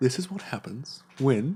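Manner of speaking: gentle mock British accent. Imitating Brian Cox explaining science: soft British accent, Brian Cox. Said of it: "speaks so softly".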